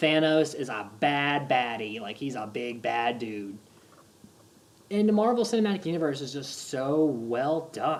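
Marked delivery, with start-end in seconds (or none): none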